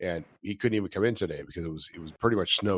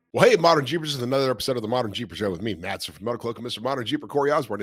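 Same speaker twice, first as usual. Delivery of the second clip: loud, rushed, rattled off way too fast; 5 semitones higher, 5 dB louder than usual. Opening a jeep show episode and introducing the hosts, talking way too fast. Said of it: "I was talking way too fast".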